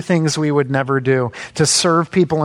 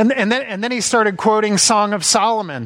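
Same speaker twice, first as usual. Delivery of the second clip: usual speaking voice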